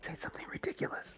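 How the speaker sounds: whispered speech. Whispering a line in character while another player speaks at a door: whispering. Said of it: "I'm gonna whisper and say".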